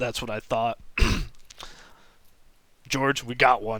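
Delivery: very gruff voice. Voicing a character who catches a failed bluff: very gruff tone. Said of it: "He takes a very gruff tone and is like".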